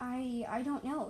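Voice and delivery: stammering. A young dragon, asked what a strange light is, answers stammering. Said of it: "Earring stammered".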